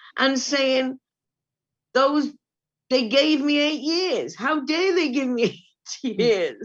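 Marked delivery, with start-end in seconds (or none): 2.0-6.7 heated, shouted angry outburst. Recalling phoning a friend after being sentenced, retelling a shout. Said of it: "ringing a friend and shouting at him".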